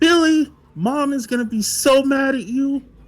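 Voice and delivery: shrill, very high, loud shout. Game master voicing Josie as she runs in to Billy, Josie yelling. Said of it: "as she runs in and yells".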